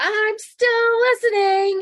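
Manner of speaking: loud, very high-pitched voice. Retelling how a father spoke up mid-conversation: imitating dad raising his voice. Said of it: "he raises his voice and he goes".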